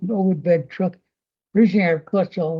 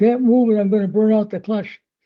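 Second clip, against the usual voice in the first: hollered, loud calling voice; 3 semitones higher than usual. Telling a story about a blocked road, voicing the truck driver: retelling a holler back. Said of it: "The guy in the truck hollered back".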